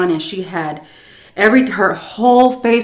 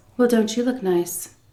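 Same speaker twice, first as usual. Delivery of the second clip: sweetest, syrupy, sugary voice; 3 semitones higher, 5 dB quieter than usual. Retelling what a woman said after opening the screen and looking them over, imitating her really sweet voice. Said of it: "With like the really sweetest voice".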